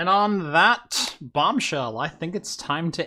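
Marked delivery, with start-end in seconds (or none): 0.0-2.0 slow, drawn-out, savoring delivery. Ending the episode with a sign-off line: Jeremy Clarkson impression. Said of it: "in my best Jeremy Clark impression. Jeremy Clarkson impression".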